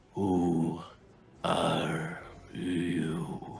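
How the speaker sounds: low, soft, raspy voice. Narrating a story, a voice seeps out of writhing clay, low, raspy voice. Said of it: "A low, raspy voice seeps out of this writhing clay".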